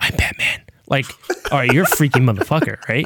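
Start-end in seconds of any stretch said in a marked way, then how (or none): 0.0-0.6 whispered superhero voice, quieter. Contrasting the two Batman actors: whispered Michael Keaton Batman line. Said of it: "holding you close".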